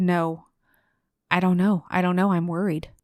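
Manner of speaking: plain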